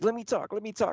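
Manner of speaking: very high, eager, excited pleading tone. Retelling how the daughter asks to speak: imitating someone excited. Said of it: "she gets all excited anytime".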